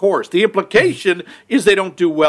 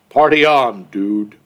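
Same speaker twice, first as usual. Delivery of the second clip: deadpan put-on voice, much lower pitch, slower; 6 semitones lower than usual. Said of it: "Absolutely deadpan".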